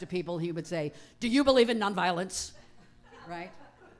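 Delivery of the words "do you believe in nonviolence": loud, high, assertive, aggressive voice. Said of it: "he would ask it so assertively".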